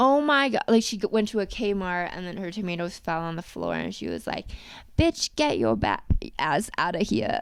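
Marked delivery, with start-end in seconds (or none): 5.0-7.4 cute, laid-on put-on Australian accent, low and swooping. Speaker quotes a woman remembered at a Kmart, imitating her Australian accent. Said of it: "she had the cutest Australian accent".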